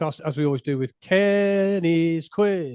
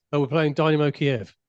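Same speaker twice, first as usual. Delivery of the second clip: ordinary delivery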